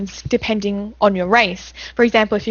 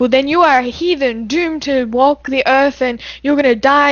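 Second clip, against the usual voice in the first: put-on harsh, mean old lady voice, higher; 4 semitones higher than usual. Retelling a game old lady condemning a player: imitating a harsh scolding old lady. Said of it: "And the old lady would be like".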